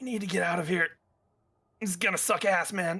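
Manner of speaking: character voice, whispering. Voicing a wounded character crawling on the ground: whisper as Riven. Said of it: "you hear a whisper from him going".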